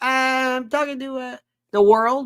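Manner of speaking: high-pitched hollering. A man in the basement answers his mother's question, yelling. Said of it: "Are you yelling?".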